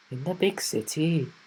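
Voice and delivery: careful, slow Welsh accent attempt. Trying the big city line again: Welsh accent. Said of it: "Let me try it again".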